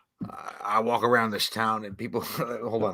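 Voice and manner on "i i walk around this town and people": dropped, deep low voice. Doing a requested impression for the other speaker: Sam Elliott impression. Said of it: "Do your best fucking Sam Elliott real quick".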